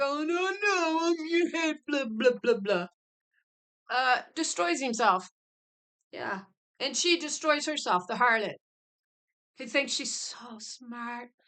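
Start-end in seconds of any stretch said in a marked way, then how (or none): 0.3-2.9 high, mocking, self-important, puffed-up man's prattle. Mocking how a man puffed up in pride talks: mocking a proud puffed-up man. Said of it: "man with his made-up idol who puffs him up in pride".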